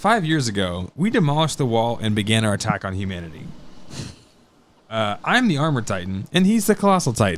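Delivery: plain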